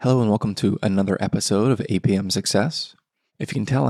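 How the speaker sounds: speaking quietly. Opening an episode while a new baby sleeps upstairs: hushed tones. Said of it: "I'm speaking in hushed tones this morning".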